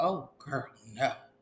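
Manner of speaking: ordinary talk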